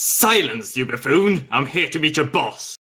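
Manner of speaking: loud, menacing, intimidating tone. Stepping up to a goblin guard to meet its boss: intimidating. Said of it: "sounded like you were trying to be intimidating".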